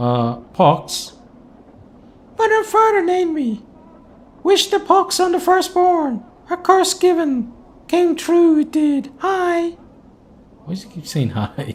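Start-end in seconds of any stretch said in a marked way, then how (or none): 2.6-9.7 put-on high-pitched little-girl voice. Narrating a game scene, a character named Pox answers who he is, in Pox's high little-girl voice. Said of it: "responds in a high pitched voice that sounds more suited to a girl of ten years".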